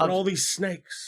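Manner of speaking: drawn out slowly with pitch going up. Imagining a movie recast with the actor in the lead: bad Christopher Walken impression. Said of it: "I can't do a good Christopher Walken".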